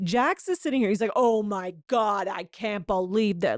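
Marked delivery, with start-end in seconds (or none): 1.2-3.6 put-on, dramatic, shocked indignation and outrage. Retelling Jax's reaction in the scene: imitating Jax's fake outrage. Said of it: "making such a scene with this fake outrage".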